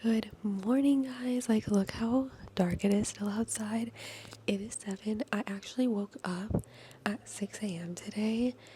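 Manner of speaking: hushed whisper. Speaker greets viewers early in the morning while someone still sleeps, whispering. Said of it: "I'm whispering because Josh is still sleeping".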